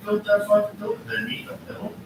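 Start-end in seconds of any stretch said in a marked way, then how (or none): 0.0-1.0 emphatic stress on "fucking", pitched high. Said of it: "Who built that building?".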